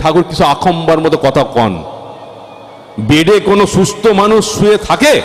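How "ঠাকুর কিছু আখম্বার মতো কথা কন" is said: ordinary delivery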